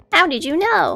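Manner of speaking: high put-on character voice. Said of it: "maybe I should still use his voice".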